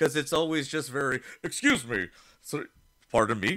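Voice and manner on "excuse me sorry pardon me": put-on robotic voice pitched much lower. Describing to co-hosts how a film character talks, Robocop voice. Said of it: "I can't do Robocop's voice".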